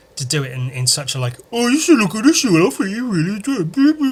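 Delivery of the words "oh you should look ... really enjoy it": taunting, mocking delivery, raised and higher pitch. Quoting what a few people told him, the speaker mimics them in a mocking imitation. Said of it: "There's no no need for me to use that tone at all".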